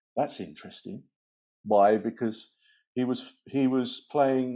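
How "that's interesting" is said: put-on whispered aside. Recalling a remark whispered to someone during a clapping lesson, retelling a whisper. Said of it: "I whispered to her".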